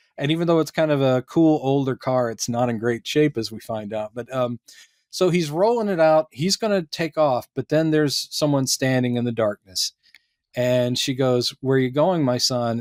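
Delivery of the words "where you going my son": put-on eerie, creepy undead-movie voice. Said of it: "a little in that eerie, like, undead movie".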